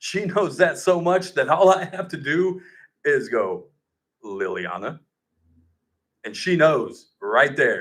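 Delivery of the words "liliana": very low, hushed, bass-heavy deep voice. Dad showing how he calls his daughter by full name, deep voice on liliana. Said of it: "there's a little bit of bass in his voice".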